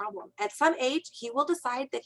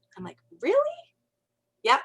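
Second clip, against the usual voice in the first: usual speaking voice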